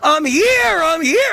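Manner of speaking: very high, very slow, acted-out calling out. Retelling calling out from far back in the crowd: retelling own screaming. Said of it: "So I'm screaming".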